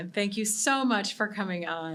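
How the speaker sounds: teary, tearful voice while talking. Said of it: "I can't believe I'm so teary right now".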